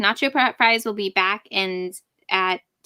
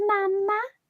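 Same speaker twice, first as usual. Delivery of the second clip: tiny, very high, doll-like voice; 12 semitones higher than usual. Imitating the little boy Gage from Pet Sematary: little doll-like Gage voice. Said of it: "now you can sound exactly like one".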